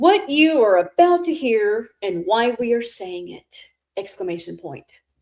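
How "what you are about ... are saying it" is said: grand, fancy, theatrical put-on dramatic stage voice. Hosts starting their introduction together, in a fancy dramatic voice. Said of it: "Let's do it in a fancy dramatic voice".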